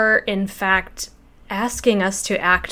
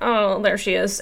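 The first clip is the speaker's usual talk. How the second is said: put-on vocal fry voice. Retelling a laugh-out-loud moment from the show: imitating Amy Carrero's vocal fry. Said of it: "vocal fry".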